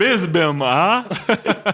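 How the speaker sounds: put-on vampire-count voice. Retelling what a former employee said at the rack, imitating his Dracula bit. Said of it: "he would talk like this".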